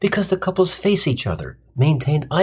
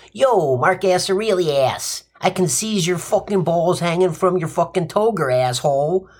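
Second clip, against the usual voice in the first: put-on New Jersey tough-guy accent; 2 semitones higher than usual. Imagining a Roman turning to another Roman, Joe Pesci tough-guy accent. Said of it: "New Jersey, tough guy accent say".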